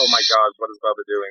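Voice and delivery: ordinary talk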